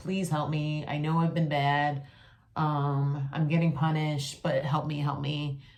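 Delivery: acted desperate pleading tone. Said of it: "pleading with God".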